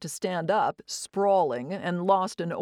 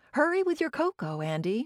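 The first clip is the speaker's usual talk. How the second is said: bright, pitched-up, called out; 7 semitones higher than usual. Reading a story aloud, the narrator speaks to Andy: said brightly. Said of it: "I said brightly".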